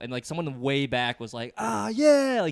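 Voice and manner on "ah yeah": mock eager, very loud, high, excited shout. Retelling how an audience member answered a comedian's question: imitating an excited audience member. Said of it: "really excited to be single".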